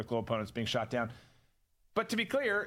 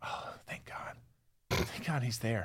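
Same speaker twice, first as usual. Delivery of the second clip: hushed, low mock whisper. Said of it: "Why are we whispering?".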